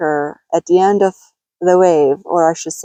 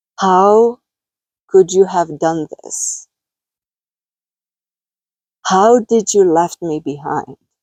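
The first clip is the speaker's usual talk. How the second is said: tearful, sad and angry calling out. Recounting calling out to love, retelling a sad, angry, tearful cry. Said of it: "so sad and angry at the same time, and between tears".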